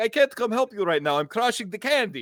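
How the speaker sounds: put-on Russian accent, pitched way up. Retelling a tabletop game scene with a candy-playing brother: mock Russian accent. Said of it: "these mock Russian accents".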